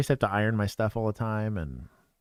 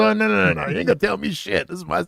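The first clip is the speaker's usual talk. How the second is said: rough, high, tough-talking police officer voice; 9 semitones higher, 4 dB louder than usual. Retelling what an officer in a clip said: imitating the officer. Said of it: "He goes".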